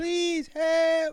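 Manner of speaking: squeaky, very high bleating goat-like voice. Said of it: "Now you're doing C three P O".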